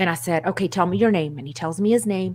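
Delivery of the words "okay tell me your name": ordinary talk, nothing marked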